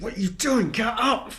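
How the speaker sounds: high-pitched yelling hobgoblin voice. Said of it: "And he just goes like".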